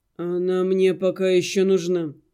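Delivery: tired, weary tone. Narrator reads a man wearily answering another's outburst. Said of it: "устало ответил Арина".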